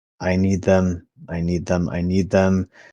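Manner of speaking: repeated murmur, muttered under the breath. Speaking in character, frustrated with another character: muttering under breath. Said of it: "I just stay under my breath".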